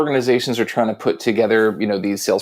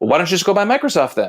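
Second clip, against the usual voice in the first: confrontational, goading, pitched-up antagonistic tone; 6 semitones higher than usual. Showing how a seller might challenge a customer directly, antagonistic challenge. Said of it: "In a very like antagonist kind of antagonistic way".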